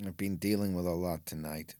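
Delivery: put-on low, downtrodden voice with mild disappointment. Voicing a wrestler speaking to a fellow wrestler; mild disappointment. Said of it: "A mild disappointment. Like downtrodden".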